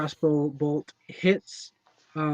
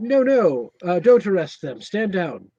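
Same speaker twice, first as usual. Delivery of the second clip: loud, drawn-out, swooping shout; 4 semitones higher, 7 dB louder than usual. Voicing the leader's voice coming out of a magic arrow: shouting. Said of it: "him shouting".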